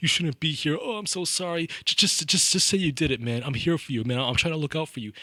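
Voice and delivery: high, tearful pleading voice.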